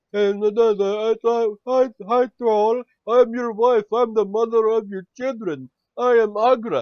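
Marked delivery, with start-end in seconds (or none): 1.3-6.9 high, loud strange mumbling voice. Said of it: "she sounds like she's mumbling, and she has a strange voice".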